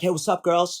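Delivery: put-on New York accent. Retelling a guy greeting two girls at a cafe, in a put-on New York accent. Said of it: "like someone from New York".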